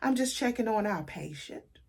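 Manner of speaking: put-on full country accent. Retelling what a transferred nurse said, in a real country accent. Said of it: "She had this real country accent".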